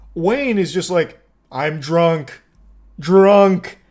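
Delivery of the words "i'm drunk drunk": primitive caveman voice, single words. Retelling a drunk driver's admission, in a caveman voice imitating Wayne. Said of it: "Speaking like a caveman with like one word".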